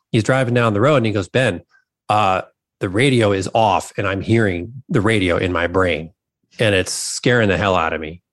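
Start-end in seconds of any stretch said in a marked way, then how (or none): none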